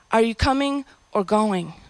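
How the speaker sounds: plain reading voice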